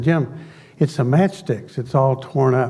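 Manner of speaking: plain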